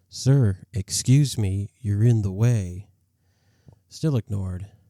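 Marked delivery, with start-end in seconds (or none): 0.1-2.9 put-on firm, raised, deliberate big boy voice. Retelling a second try after being ignored, in a firm big-boy voice. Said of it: "I used my big boy voice".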